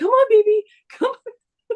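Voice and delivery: acted-out frantic calling, very high. Retelling calling an escaped cat in the yard: imitating a raving lunatic. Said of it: "like a raving lunatic".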